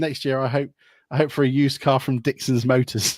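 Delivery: ordinary talk, nothing marked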